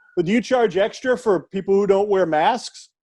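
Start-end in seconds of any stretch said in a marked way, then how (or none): none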